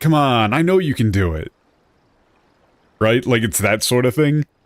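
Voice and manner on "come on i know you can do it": sleazy, slimy, overly familiar put-on friendliness. Describing a character's overly familiar way of talking, imitating a slimy merchant. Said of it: "He's just talking like a slimy merchant".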